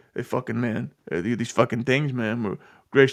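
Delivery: acted macho cool-guy voice with tough-guy swagger. Retelling his answers to kids at a Comic-Con: imitating a tough-guy act. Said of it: "he's replying with answers like this".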